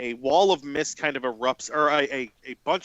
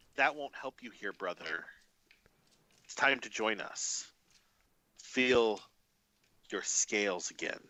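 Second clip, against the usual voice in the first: voice of a serpent creature; 3 semitones lower, 8 dB quieter than usual. Voicing a creature that tells a player character to rejoin: snake creature voice. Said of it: "It's in whatever snake talk this is".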